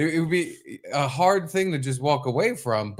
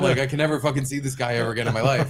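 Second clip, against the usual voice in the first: normal talking voice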